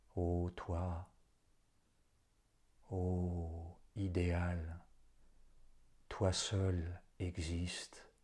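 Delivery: very slow, low, halting, near-stammering murmured hush. Reading fiction aloud, the old representative speaks to himself: low, almost stammering. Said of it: "presque en bégayant, bas et se parlant à lui-même".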